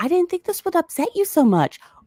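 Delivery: very high, condescending talking-down voice, acted out. Retelling what a woman said to the speaker after a panel, imitating her condescending tone. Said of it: "In her condescending tone".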